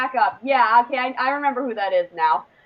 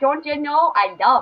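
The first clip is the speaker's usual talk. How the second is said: put-on Fargo-style regional accent. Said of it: "That was spot on".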